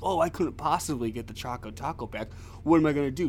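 put-on snide, mocking, sarcastic tone. Mocking someone's tone about getting the Choco Taco back: mock-sarcastic tone. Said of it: "you had a little sarcastic fucking tone about it. Like".

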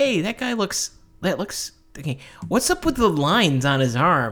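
sarcastic, condescending, high, swooping sing-song voice. Retelling a video of Stan Lee critiquing artists: imitating sarcastic condescending Stan Lee. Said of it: "him being a sarcastic, condescending asshole".

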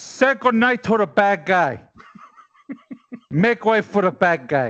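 put-on movie gangster voice. Asked by the other speaker to show it; Tony Montana impression. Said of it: "you have a Tony Montana impersonation?".

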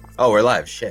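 phony, staged, fake surprise. Starting a live stream as if caught off guard: fake surprise. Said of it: "That was the fakest "Oh, we're live" ever".

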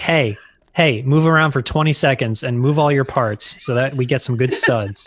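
normal talking voice

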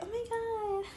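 very high-pitched, fake innocent voice. Mocking a girl from the party: imitating a wannabe innocent voice. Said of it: "innocent, wannabe innocent voice".

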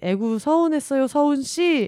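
high, playful, ribbing, faux-sympathetic teasing tone. Retelling how office colleagues mocked the speaker after a call, imitating colleagues' teasing. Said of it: "하며 여기저기서 놀리는 거예요".

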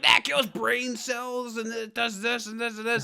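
high, mad, angry telling-off tone. Retelling how their sister, a teacher, chewed them out, imitating an angry scolding. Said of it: "she was so mad".

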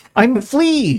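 very high, tiny, squeaky little voice. Voicing the tiny thing that drops from Mouse's back: small voice as Flea. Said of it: "the small voice goes".

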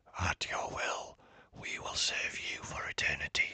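hoarse, raw, scratchy whisper. A spirit whispers back to a boy who says he is only a mechanic: scratchy, sore whisper. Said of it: "the spirit whispered back, his voice scratchy and sore from not being used for a long time. ... his voice scratchy and sore from not being used for a long time".

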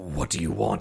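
unnaturally deep growling voice. Game master voicing a frightened dungeon figure answering a player: unnaturally deep growling voice. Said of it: "his voice is unnaturally deep. Like growling".

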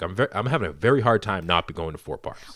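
usual speaking voice

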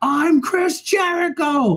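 mock, very high, drunken, out-of-nowhere scream. Recounting a drunken shouting match, retelling a scream. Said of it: "just start screaming".

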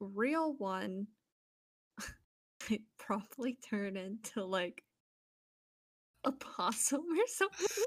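laughing through the words. Taking a turn in a group conversation, laughing while speaking. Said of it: "why are you laughing while you say that?".

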